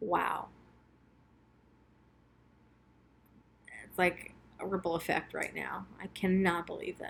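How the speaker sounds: fighting back tears. Realizing what a tattoo now means to her, choked up. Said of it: "I'm trying not to be choked up about it".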